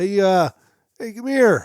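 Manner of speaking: high, loud yell. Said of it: "She yells".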